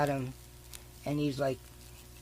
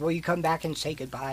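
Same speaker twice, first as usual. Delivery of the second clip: ordinary talk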